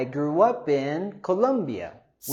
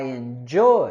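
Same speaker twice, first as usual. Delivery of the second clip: enjoy with raised pitch and stress on -joy; 3 semitones lower, 3 dB louder than usual. Pronunciation lesson on word stress in i enjoy: stress on joy in enjoy. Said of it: "we want to go higher with our stress and intonation on the second syllable".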